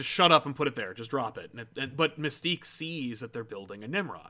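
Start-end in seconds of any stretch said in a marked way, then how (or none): none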